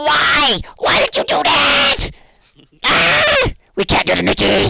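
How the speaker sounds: very high, slow, rough, drawn-out shrieking wails. A storyteller voices several evil gnomes reacting to the players: screaming evil gnomes. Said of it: "They start screaming".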